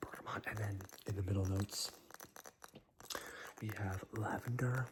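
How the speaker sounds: very soft ASMR-style whisper.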